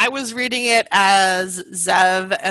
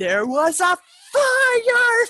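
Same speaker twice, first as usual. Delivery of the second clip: put-on yelling movie character voice, pitched higher. Retelling a Boondock Saints massacre scene: imitating Willem Dafoe yelling. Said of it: "and just yells".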